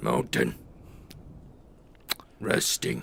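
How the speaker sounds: acted big monster orc voice. Narrating a game, voicing the orc answering a player, in Bordeaux orc voice. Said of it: "the backside of a large orc".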